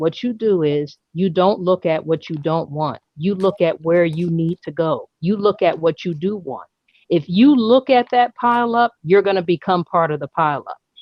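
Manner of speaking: ordinary talk, nothing marked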